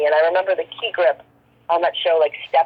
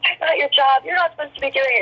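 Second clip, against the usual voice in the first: mock high screaming, scolding outburst; 8 semitones higher than usual. Retelling being screamed at in a hallway, retelling a yell. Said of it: "He was screaming and yelling at me".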